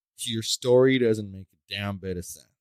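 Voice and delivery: ordinary talk, nothing marked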